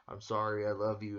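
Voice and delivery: normal talking voice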